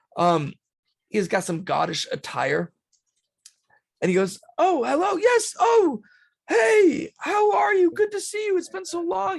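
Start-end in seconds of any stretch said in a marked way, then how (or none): 4.6-9.4 mock very high, loud, excited voice. Telling a story about a man greeting someone, retelling an excited greeting. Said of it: "He kind of all excited".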